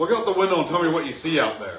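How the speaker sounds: very loud, high, angry yell. Retelling getting a new bike as a birthday present, the speaker quotes him: imitating someone acting angry. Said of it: "acting like all pissed off".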